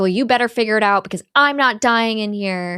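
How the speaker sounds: mild, held-back, toned-down scream. Retelling a film scene where a character yells at another: imitating someone screaming. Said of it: "He's screaming and being like".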